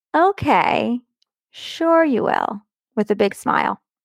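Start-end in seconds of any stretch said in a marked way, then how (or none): 0.1-2.6 very slow, drawling, condescending talking-down voice. Retelling her sister's laughing reply to her and her husband, in a mock-condescending voice. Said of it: "said in a condescending voice".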